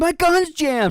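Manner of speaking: high, loud, panicked shouting cry.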